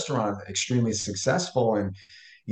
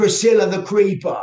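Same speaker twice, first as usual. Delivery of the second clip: put-on very high, very loud, pitched-up British accent; 9 semitones higher, 8 dB louder than usual. Retelling a name that popped into mind: imitating own british accent. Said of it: "in a British accent of all things".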